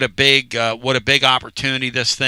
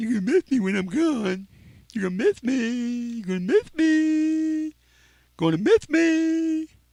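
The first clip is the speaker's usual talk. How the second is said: very high fake whine, "me" drawn out; 12 semitones higher, 6 dB quieter than usual. Complaining to viewers about few likes: mock whiny voice. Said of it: "I like sounding whiny".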